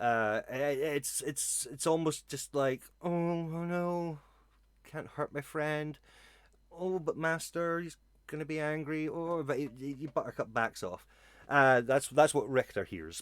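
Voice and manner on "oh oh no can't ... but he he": soft, whimpering little wolf voice. Narrator voices Buttercup backing away from hurting a friend: Buttercup whimpering. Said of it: "little buttercup's whimpering a bit".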